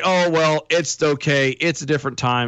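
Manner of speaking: usual speaking voice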